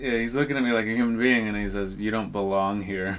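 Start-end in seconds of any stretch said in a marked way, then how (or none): 2.0-3.2 put-on serious, grave tone. Retelling a customer at the counter getting serious: imitating someone turning serious. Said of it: "he got real serious for a second".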